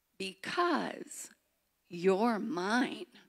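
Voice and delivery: very slow, drawn-out, deliberate speech. Eli, hands on Punchinello's shoulders, answers his question: spoken very slowly. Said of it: "spoke very slowly".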